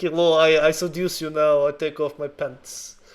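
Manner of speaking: horrendous, exaggerated put-on Russian accent. Describing a woman's scene in a video, in the most horrendous Russian accent. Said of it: "the most horrendous accent".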